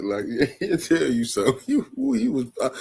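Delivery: talking through laughter. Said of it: "I'm laughing because I'm just thinking".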